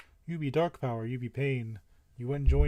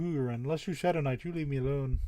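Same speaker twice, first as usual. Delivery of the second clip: ordinary delivery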